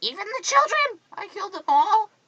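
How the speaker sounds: mock, very high, shrill scream. Retelling a movie scene in which the character screams at Padme. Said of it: "screams at Padme and screams".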